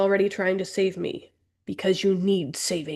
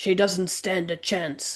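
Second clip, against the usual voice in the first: really gravelly, rough-edged character voice. Reading a story aloud, voicing Mira: gravelly voice for Mira. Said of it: "I just gave her that really gravelly voice".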